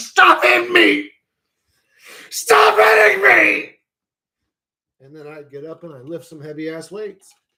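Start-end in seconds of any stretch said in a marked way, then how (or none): 0.0-3.7 very high, raspy, rough, drawn-out pleading yell. Acting out being punched on the couch, trying to survive: imitating own yelling. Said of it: "I don't yell that out".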